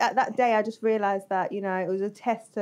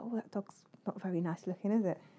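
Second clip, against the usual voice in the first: very quiet, hushed whisper; 10 dB quieter than usual. Retelling what they said to their sister, imitating own whisper. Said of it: "I whispered to my sister".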